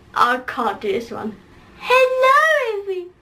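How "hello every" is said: pixie-like put-on voice, higher pitch. Trying an impression of Tyler Oakley: pixie-like Tyler Oakley impression. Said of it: "Why is that really pixie-like?".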